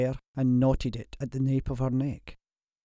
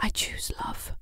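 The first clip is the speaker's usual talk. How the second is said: soft, hushed, barely voiced whisper. Narrator reads a woman answering a man's plea to run away, whispered. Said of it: "she whispered".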